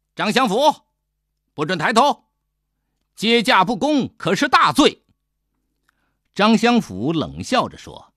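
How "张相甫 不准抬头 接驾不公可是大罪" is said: sharp, loud, high-pitched barking. The adviser shouts at Zhang Xiangfu, loudly barked. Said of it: "师爷大声地喝道".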